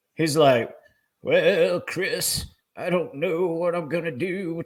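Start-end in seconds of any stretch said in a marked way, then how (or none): 1.2-4.7 put-on old-sounding voice, pitched up. Retelling a friend who had just retired: imitating someone sounding old. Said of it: "he started sounding old".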